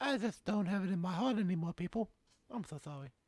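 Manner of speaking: voice pitched very high. Repeating a quote from Mike Tyson in a Mike Tyson voice. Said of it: "doing Tyson voices".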